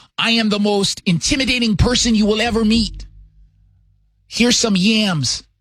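mocking parody voice. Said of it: "This sounds like a parody on S N L".

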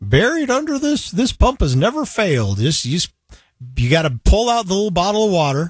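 put-on slow, swooping old desert prospector voice. Speaker recalling a note in a church video, read in an old prospector voice. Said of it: "it's got that old prospector voice".

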